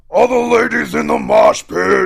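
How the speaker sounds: very loud, high, raspy, rough furry-puppet growl. Quoting a guy calling to the ladies in the mosh pit, Grover-like puppet voice. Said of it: "in this voice ... Like in that voice, like exactly ... in a Grover like Sesame Street voice".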